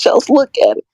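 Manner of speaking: high-pitched voice, pushed up, close to crying. Quoting someone who kept repeating a line: imitating a high-pitched voice. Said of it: "In his high-pitched voice?".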